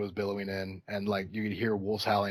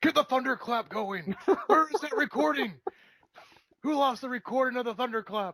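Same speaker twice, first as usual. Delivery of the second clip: mock, shrill, very high-pitched yelling; 6 dB louder than usual. Speaker describes a guy yelling at the worker behind the counter, retelling a guy's yell. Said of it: "Some guy like yelling at him like".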